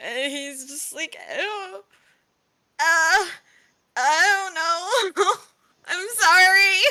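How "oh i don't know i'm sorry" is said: dazed, stunned, high, slow, I stretched out. Narrator voices Todd looking down at his hands, shocked and awed. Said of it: "like in shock and awe".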